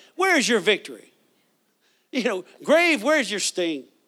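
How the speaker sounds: mock cheeky, sassy, taunting tone. Retelling how Paul taunted death: imitating Paul being sassy. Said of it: "Paul got sassy with death".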